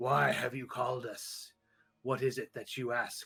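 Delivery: deep, gurgling, bubbling voice. Narrating a voice heard calling out, deep bubbly voice. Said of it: "deep, bubbly voice saying".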